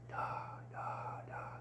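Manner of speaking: soft whisper of repeated "da" syllables. Showing the release of air on a whispered D: whispered syllables. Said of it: "when you're whispering".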